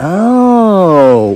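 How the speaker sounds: "oh" with yuppie-ish, knowing inflection. Retelling how they answered a yuppie, with a yuppie-ish inflected 'oh'. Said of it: "When you inflect it like that in yuppie-ish".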